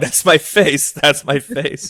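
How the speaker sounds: high-pitched, acted-out yelling, repeated twice. Retelling seeing own face on tv in a packed hotel bar: retelling own past yelling. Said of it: "I start yelling".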